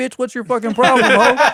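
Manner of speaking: very high, shrill, loud, enraged acted scream. Retelling a quarrel with a restaurant worker: retelling screaming at someone. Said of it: "I'm starting to scream at him".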